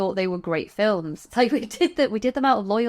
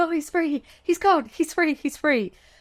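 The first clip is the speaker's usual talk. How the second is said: put-on frantic outburst, much higher; 8 semitones higher than usual. Describing Greta's monologue after the Baroness is killed, mock-frantic, quoting Greta. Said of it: "going apeshit like".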